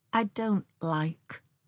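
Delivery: hushed, quiet and intense. A woman refuses when her companion says she can kill the animal, with quiet intensity. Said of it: "with quiet intensity".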